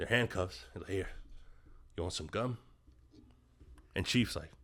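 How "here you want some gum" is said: mock panting, lower and quieter. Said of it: "McMurphy's like, out of breath".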